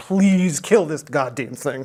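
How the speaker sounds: earnest, beseeching, begging pleading tone. Retelling what the MSRC team keeps saying: imitating pleading. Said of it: "who's just pleading with us".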